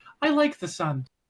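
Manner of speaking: woman's voice, put on. Introduced by another speaker, he answers about the sun in a female voice. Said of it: "says in a female voice".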